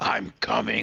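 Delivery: really dark, evil-sounding tone. Showing how a game's hidden entity might speak to a player: really dark voice. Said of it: "in a really fucking dark voice".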